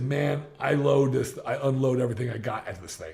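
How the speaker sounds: ordinary talk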